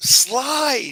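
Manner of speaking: loud, high-pitched yelling.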